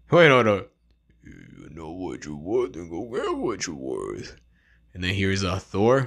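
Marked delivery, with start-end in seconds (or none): 1.2-4.3 put-on mumbling tough-guy voice, lower and quieter. Teaching how to do voice impressions: Sylvester Stallone. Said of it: "Sylvester Stallone".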